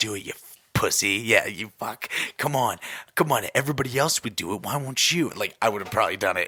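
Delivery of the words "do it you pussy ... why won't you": mock evil little devil voice. Speaker acting out the little devil on the shoulder egging them on: put-on evil devil voice. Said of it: "Just the evil voice".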